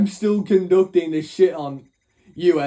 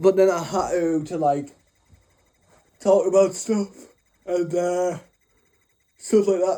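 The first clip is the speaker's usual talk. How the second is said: speaking through a yawn, tired. Recently woken speaker telling a story on a recording: yawning. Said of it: "Sorry for yawning".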